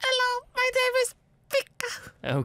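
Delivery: very high, piping, squeaky character voice. Asked to introduce yourself in the character's voice, super high-pitched Pika voice. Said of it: "He has a super high pitched voice".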